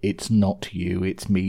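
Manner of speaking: plain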